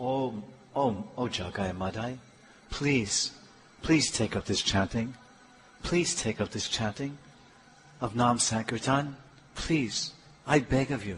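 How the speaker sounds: very quiet, low, tender, loving, sweet put-on pleading. Retelling how he pleaded with jagai and madhai, acting out a sweet, loving plea. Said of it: "Very sweet voice, full of love".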